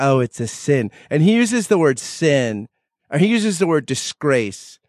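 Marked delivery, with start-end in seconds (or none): 0.0-0.9 put-on elderly South Philly woman voice. Imitating old women from south philly: south philly old woman voice. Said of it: "a lot of women from, like, South Philly say".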